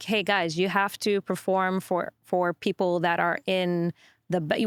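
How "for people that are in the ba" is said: normal talking voice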